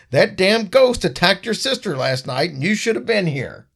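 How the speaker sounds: put-on high, furious, irate yelling. Retelling what the dad said to Jared: imitating someone yelling. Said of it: "he is yelling and he's screaming".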